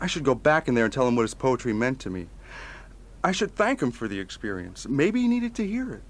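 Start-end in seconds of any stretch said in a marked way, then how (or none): none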